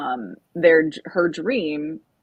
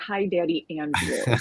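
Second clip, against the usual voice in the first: ordinary delivery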